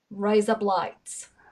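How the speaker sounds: quick Australian accent. Repeating a phrase fast as taught to sound Australian: fast, Australian-sounding. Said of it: "say it again and say it relatively fast".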